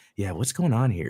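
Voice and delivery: mutter under breath. Describing how he was portrayed, quoting him: mimicking a mutter under breath. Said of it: "almost under his breath".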